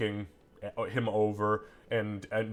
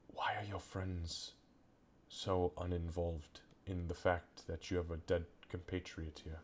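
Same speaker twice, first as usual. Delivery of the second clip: barely audible, very quiet, hushed whisper; 3 semitones lower, 12 dB quieter than usual. Narrating a game, the speaker voices a character who looks over and whispers. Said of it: "he whispers".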